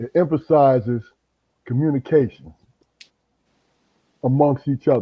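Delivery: slow, deliberate, halting, broken into short pieces. Doing podcast housekeeping, the speaker slows down to explain the show. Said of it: "Let me slow down a little bit".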